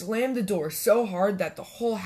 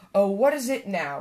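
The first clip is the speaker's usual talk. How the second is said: plain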